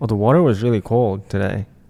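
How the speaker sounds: ordinary delivery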